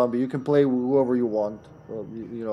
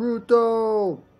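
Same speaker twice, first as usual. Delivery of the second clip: long, drawn-out, very high scream; 9 semitones higher than usual. Imagining a teammate screaming a name across the game: imitating Mark screaming. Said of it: "imagine Mark screaming from Pruto".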